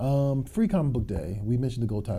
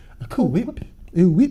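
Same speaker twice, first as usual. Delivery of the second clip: very high, very loud, shrill cartoon voice, squealed; 9 semitones higher, 10 dB louder than usual. Joking around with friends mid-conversation, say it in a Stewie voice. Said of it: "to Stewie voice".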